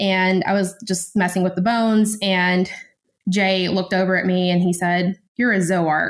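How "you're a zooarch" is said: mock accusatory tone. Retelling what a teacher said while watching bones: imitating an accusatory tone. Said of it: "kind of in this very, like, accusatory way".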